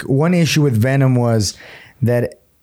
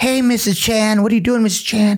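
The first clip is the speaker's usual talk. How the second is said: put-on whiny, high voice in an American accent; 10 semitones higher than usual. Mocking an actor's American accent, doing a Tom Hardy American accent. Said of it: "His American accent is real like whiny".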